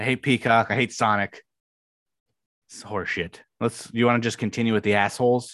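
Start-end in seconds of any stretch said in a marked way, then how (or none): 0.0-3.4 annoyed, irritated tone. Complaining about a streaming app: annoyed. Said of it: "I'm pissed".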